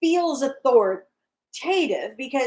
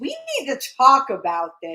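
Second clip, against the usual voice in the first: motherly, parental, sing-song tone. Retelling a woman's comment to him: mock motherly tone. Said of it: "in her best motherly tone".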